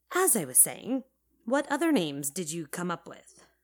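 ordinary delivery

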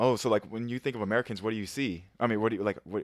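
ordinary talk

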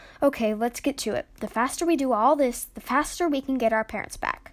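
ordinary delivery

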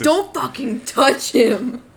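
very slow, seething, loud, furious outburst. Retelling a character's threat to an old woman: imitating an angry outburst. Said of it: "so angry".

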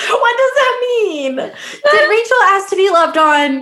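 laughing mock outrage, high and loud.

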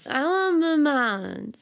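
loud, high-pitched, acted drunken, tipsy voice. Joking about ordering at a bar, in a put-on drunk Carly voice. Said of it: "Drunk Carly voice".

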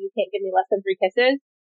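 ordinary talk, nothing marked

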